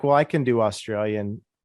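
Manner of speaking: ordinary talk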